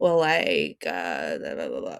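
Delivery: put-on very low, swooping Californian valley-girl vocal fry. Describing how people picture the california way of talking: valley girl vocal fry. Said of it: "valley girl".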